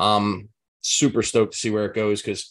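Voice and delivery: normal talking voice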